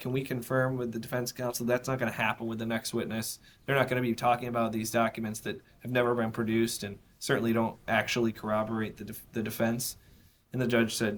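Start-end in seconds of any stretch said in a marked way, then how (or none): none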